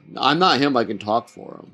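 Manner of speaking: usual speaking voice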